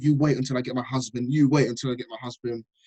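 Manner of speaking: plain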